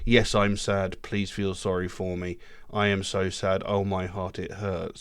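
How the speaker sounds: deadpan, expressionless droning, flat monotone, level pitch. Showing how not to convey heartbreak in music: flat monotone. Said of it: "you don't just want a monotone, flat sort of".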